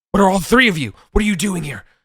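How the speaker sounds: put-on shrill, frantic old man voice, very high, loud, panicked. Narrating a scene where an old man forgets the players; panicking old man. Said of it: "this old man is panicking".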